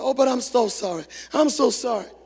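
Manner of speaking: put-on tearful, crying voice. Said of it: "she was crying and looking around".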